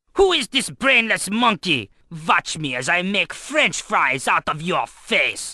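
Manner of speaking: put-on German accent, marked on watch. Imagining someone behind the studio cranking up his mic, german accent. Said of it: "definitely a German accent because he says watch".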